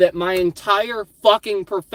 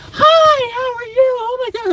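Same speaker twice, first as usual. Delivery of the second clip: shrill, very high, loud put-on fake-friendly voice; 5 dB louder than usual. Imitating a woman greeting a customer: imitating her voice going up. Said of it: "her voice goes up".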